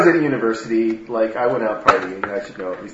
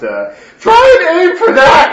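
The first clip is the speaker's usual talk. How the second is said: put-on drunken whisper-shout, much higher and louder; 9 dB louder than usual. During a game, a drunk character tries to whisper advice but shouts it. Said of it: "I drunkenly whisper, but it turns out more of a shout".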